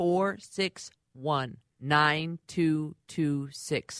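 slow, deliberate, measured pace. Giving a number slowly so as not to mix it up, slow, deliberate. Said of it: "I'm saying it slow".

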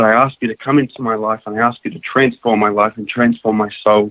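ordinary talk, nothing marked

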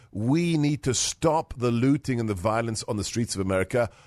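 ordinary talk

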